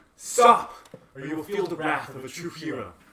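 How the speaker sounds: very loud, booming heroic shout. Playing a hero in a tabletop game, voice magically boosted, booming voice. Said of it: "to make my voice boom 3 times louder".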